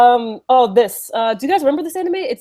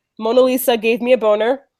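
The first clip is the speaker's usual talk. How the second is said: blurted out quickly, moving straight on. Announcing he will say this line fast, said very fast. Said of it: "I'm gonna say it fast".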